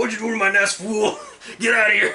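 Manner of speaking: shrill, very loud, high-pitched shout. Voicing a creature in a movie scene, shouting at intruders: Mister T voice. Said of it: "Q sounds like Mister T".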